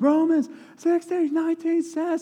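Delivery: very high, shrill, all-out, top-of-the-lungs scream. Heading down a mountain on a hike, the speaker retells screaming at the top of their lungs. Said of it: "I'm still screaming at the top of my lungs".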